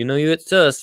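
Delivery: put-on American accent. Joking about a blue-painted shed in a put-on American accent. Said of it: "I'm not gonna be able to stop the American accent".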